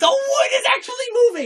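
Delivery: high, fast, thrilled excited shout. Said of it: "Tolkien got really excited".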